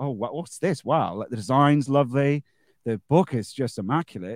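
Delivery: ordinary delivery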